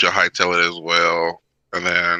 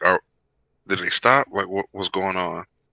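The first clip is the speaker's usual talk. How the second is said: hushed half-whisper under the breath, stumbling, halting; 3 dB quieter than usual. Asking in character whether the others have stopped: half-whispering. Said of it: "I just whisper".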